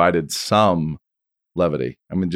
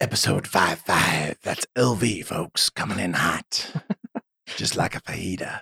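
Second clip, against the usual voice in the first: put-on creepy voice, quieter; 4 dB quieter than usual. Podcast host announces the episode number: creepy voice. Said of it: "That's [name]'s creepy voice".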